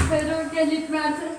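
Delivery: normal talking voice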